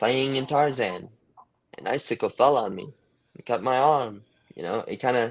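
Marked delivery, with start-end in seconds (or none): 0.0-4.2 slow, emphatic reading voice, each phrase stressed. Showing how the author emphasizes lines: Kerouac impression. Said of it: "I'm trying to emphasize it like he does".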